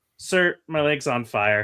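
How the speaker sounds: offhand, matter-of-fact tone. Retelling a movie character's line about his leg: imitating a casual delivery. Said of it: "just so casually".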